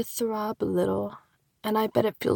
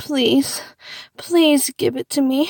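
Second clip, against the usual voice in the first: high, loud desperate begging tone. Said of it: "when I say".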